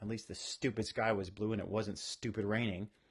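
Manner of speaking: ordinary talk, nothing marked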